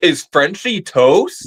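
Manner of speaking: TV announcer voice. Recalling a line quoted monthly with a sister, doing a Big Brother announcer impression. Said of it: "The announcer at one point just immediately said".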